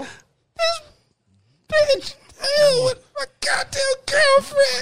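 sobbing. In a skit, a man calls his best friend, crying on the phone. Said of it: "stop crying".

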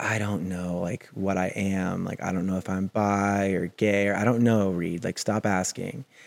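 put-on exhausted sad voice. Recalling what he said when asked how he was feeling, imitating an exhausted, sad voice. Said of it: "the exhaustion and the sadness in his voice".

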